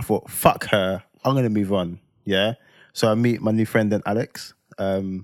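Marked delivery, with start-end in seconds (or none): none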